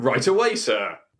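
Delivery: put-on English accent. Playing the bartender Kevin Hart serving The Rock: Kevin Hart with English accent. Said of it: "he has an English accent".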